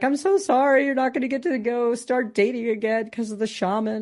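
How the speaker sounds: high, tearful, sobbing crying voice. Retelling what she said to the speaker: imitating someone crying. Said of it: "I just remember her crying".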